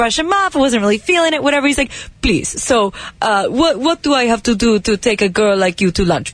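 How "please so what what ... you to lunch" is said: pleading put-on Persian accent. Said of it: "I like the accent".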